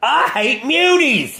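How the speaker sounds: exaggerated, over-the-top cartoon voice, very high. Mocking a cartoon's dialogue, the speaker does an over-the-top cartoon delivery. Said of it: "Like it's it was over the top".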